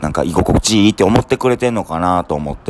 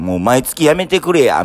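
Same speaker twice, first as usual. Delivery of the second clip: put-on wry, ironic, joking tone, pitched up; 6 semitones higher than usual. A speaker quotes what people jokingly say to them, mock-ironic retelling. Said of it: "ちょっと皮肉を込めて".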